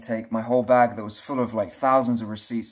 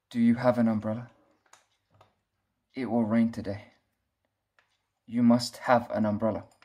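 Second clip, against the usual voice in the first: acted solemn, earnest, very serious, grave voice. Retelling what an old guy said to the speaker; retelling a very serious warning. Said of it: "he said to me in a very serious voice".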